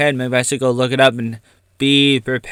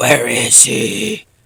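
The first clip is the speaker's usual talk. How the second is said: put-on hero voice, rough, creaky and scraping. Speaker does an impression of Batman: Batman voice. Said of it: "That's my uh impression of a uh, uh Batman".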